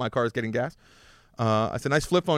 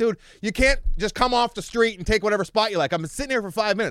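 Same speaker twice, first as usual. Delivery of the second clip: high, heated, angry put-on yelling; 8 semitones higher than usual. Retelling confronting a driver who took their spot, through his window; retelling a yell. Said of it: "I'm yelling at him through the window".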